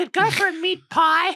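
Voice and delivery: very high, loud voice, pitched way up. Speaker mimics how another speaker's mom talks: imitating his mom's voice. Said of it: "That's how his mom talks".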